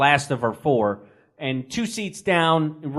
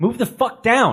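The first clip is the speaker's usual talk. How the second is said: mock yelling, higher pitched; 6 semitones higher, 3 dB louder than usual. Joining a shared story, speaker reenacts what he yelled, retelling a yell. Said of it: "Chris starts yelling at me".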